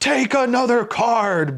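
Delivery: booming voice, very loud and very high. Telling a joke, acting out the voice answering a card player, booming voice. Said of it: "booms the voice".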